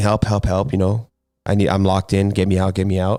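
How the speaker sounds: usual speaking voice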